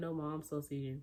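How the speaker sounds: ordinary delivery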